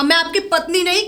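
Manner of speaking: ordinary delivery, nothing marked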